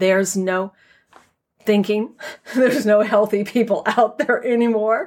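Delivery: words breaking into laughs, laughing. Addressing the audience mid-explanation, the speaker breaks into laughing while talking. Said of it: "I'm sorry, I'm laughing".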